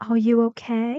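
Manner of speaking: rising, question-like tune at the end of okay. Telling learners to watch the sentence end, the speaker asks with rising intonation on okay. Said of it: "A rising intonation".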